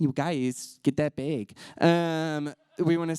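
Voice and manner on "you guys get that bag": put-on Minnesota accent. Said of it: "That's a pretty good Minnesota accent".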